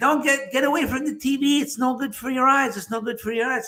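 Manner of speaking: high-pitched yelling. Retelling sitting close to the TV as a kid: imitating parents yelling. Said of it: "they'd be yelling at me".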